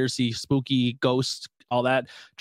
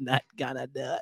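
put-on old politician voice, quieter; 7 dB quieter than usual. Doing the impression the others just named, after they discuss it: George H. W. Bush impression. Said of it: "Everybody's George H W Bush impression is really an impression of Dana Carvey".

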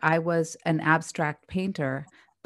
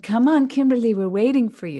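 put-on Israeli accent, raised and pitched up; 6 semitones higher, 5 dB louder than usual. Speaker quoting what her painter friend said to her, Liat Yosefor's Israeli accent. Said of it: "she says with this accent".

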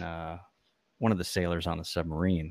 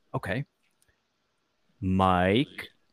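mock utterly deadpan, bone-dry, drawn-out reply; 3 dB louder than usual. Retelling a movie sailor giving his nickname: imitating a very dry delivery. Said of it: "Very dry".

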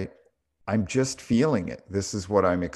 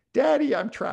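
put-on acted little-girl scream, shrill and very high. Recounting his daughter thinking she was trapped, retelling daughter's scream. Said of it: "And she's screaming".

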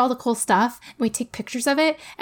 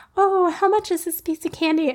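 mock-sweet, all-innocent tone, pitched high; 6 semitones higher than usual. Retelling a kid asking the price of candy at the front: imitating an innocent ask. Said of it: "he asks all innocently".

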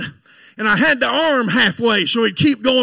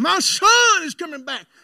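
put-on slow, sustained, high drawn-out scream; 5 semitones higher, 3 dB quieter than usual. Retelling a mother's words in church: imitating someone screaming. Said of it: "She was screaming".

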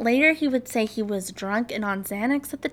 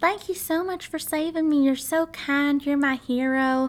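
put-on sweetest, sugary, little Texan accent; 3 semitones higher than usual. Retelling how she thanked Eric for saving her: mock-sweet little Texan accent. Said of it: "in the sweetest little Texan accent she could".

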